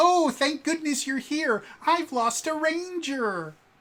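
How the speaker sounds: character voice pitched way up, very loud. Acting out an introduction scene, in an Alpha 5 voice. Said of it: "just because I really love doing this voice".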